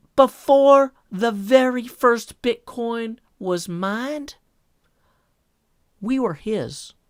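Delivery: slow, lifted youth pastor preaching voice. Reading a tweet aloud in a put-on youth pastor voice. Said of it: "here's your youth pastor voice tweet".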